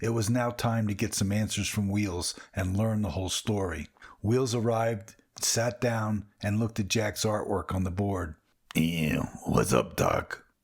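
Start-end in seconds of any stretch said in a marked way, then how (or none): 8.7-10.4 very deep, very low, slow, drawn-out cartoon character voice. Narrating Wheels arriving and looking at Jack's board, in his best cartoon voice. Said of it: "he mimicked in his best cartoon voice".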